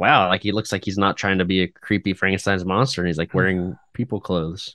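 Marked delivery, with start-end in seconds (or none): none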